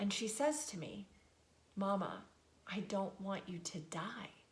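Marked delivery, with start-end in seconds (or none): 1.8-4.3 put-on tearful child voice, quieter. Retelling a daughter's words at bedtime: imitating a crying child. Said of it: "she bursts into tears".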